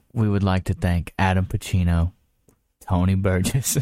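very sweet, low, seductive voice. Reading out the names of Patreon supporters in the sweetest, most seductive voice. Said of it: "Sweetest, most seductive voice you can do?".

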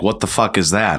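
ordinary talk

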